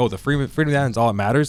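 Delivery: ironic delivery setting words off as in quotes. Discussing a scene where she speaks among the dead soldiers, imitating her quoting tone. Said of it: "She kind of puts it in quotes like".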